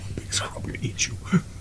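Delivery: soft, fast, threatening whisper.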